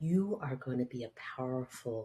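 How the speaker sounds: hushed whisper. Speaker recounts what they whispered to her: retelling a whisper. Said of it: "And I just whispered to her".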